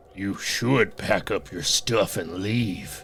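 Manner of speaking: manly deep voice, low, lifeless, calm and even. Retelling the reply that came back to them, in a manly low voice. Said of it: "a manly, low voice answers me".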